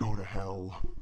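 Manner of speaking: low, deep demonic voice. On a horror web show, the host says the line in a demon voice. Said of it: "say go to hell in the demon voice".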